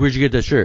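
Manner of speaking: put-on angry, confronting tone. Retelling a stranger confronting them about their shirt: imitating an angry man. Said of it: "he was all mad at me".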